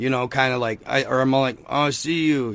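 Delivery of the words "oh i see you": mumbling under breath, quieter. Retelling trying to tell them while not yet awake: imitating own mumbling under breath. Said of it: "mumbling under my breath".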